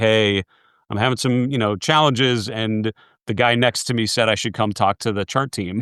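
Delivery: ordinary delivery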